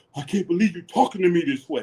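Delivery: affronted, taken-aback, put-upon, offended tone. Retelling a confrontation in a meeting: imitating Pastor Dow sounding offended. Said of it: "The thing he got so offended".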